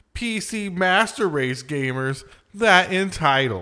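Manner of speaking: derisive, high, drawn-out mocking tone. Questioning why gamers complain about exclusives, the speaker switches to a mocking voice. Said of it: "in a mocking voice".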